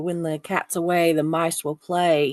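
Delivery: ordinary delivery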